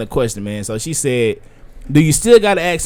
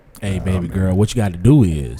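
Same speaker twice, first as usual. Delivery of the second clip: put-on r&b-sounding voice, pitched much lower; 6 semitones lower than usual. Showing how he'd call someone baby girl, in [name]'s R&B voice. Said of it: "That sounded like some R&B shit".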